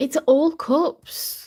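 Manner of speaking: sudden, surprised shout, high and loud. Reading tarot cards aloud and surprised by the spread, shouting. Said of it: "I don't know why I'm shouting".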